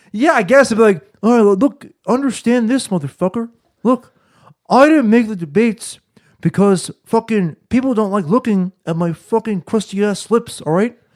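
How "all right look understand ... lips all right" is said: put-on self-important, blustering, pompous frat-boy voice. Doing the voice just described to the others: pompous frat-boy voice. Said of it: "It's more so of like a fucking like a pompous fucking".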